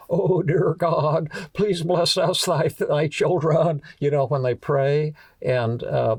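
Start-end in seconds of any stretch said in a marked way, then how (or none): 0.1-3.8 fake, wavering, warbly preacher voice. Describing how ministers pray, imitating a warbly praying voice. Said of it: "ministers pray with a warbly voice".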